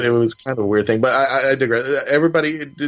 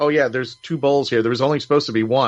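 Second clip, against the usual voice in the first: normal talking voice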